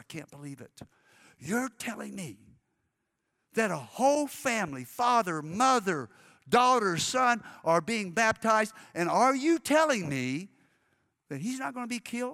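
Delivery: put-on loud whisper. Retelling what a young lady said during a baptism service: imitating a loud whisper. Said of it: "she said in the loudest whisper".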